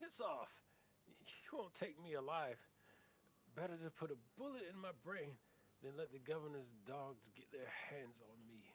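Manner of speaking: put-on loud, high boyish shout. Narrator voicing someone behind a solid-looking door as players approach; high boyish voice, shouting. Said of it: "a high boyish voice shouts out".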